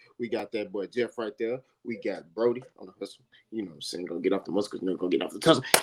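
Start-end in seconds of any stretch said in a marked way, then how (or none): 4.1-5.6 very fast, low, rapid-fire rhyming patter. Podcast host opening the show to listeners, very fast. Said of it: "I just said that real fast, real quick".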